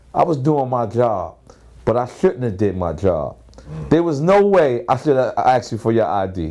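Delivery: ordinary talk, nothing marked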